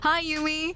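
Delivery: put-on high Valley Girl accent, laid on. Voicing a game character greeting Yumi, in a Valley Girl voice. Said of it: "I just do another Valley Girl voice".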